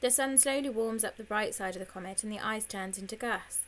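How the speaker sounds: plain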